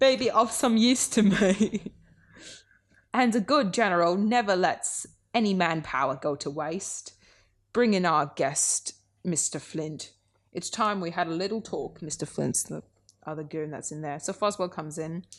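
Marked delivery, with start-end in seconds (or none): 0.0-12.0 put-on loud, slow, booming, drawn-out British accent. Recounting a story scene, voicing Kingpin in a British accent. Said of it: "I'm gonna do the British accent for Kingpin again".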